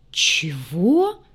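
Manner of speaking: stunned, astonished, amazed. A junior mechanic reacts to a sobbing girl's cry, astonished. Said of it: "изумленно воззрился он".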